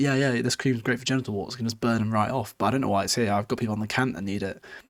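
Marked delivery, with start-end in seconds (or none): none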